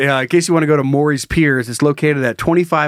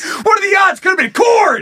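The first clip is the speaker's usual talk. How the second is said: mock hard laughing, higher pitched. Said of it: "and you're like".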